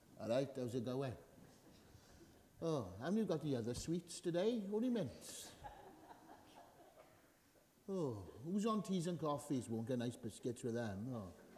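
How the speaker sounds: mopey grumbling. Acting out how churchgoers actually arrive: mock glum churchgoer. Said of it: "you come here like this".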